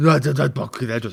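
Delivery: stammering on first word, dismissive brush-off tone. Mocking how Dallas talks when he's wrong: imitating Dallas being wrong. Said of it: "that's what Dallas says when he's wrong".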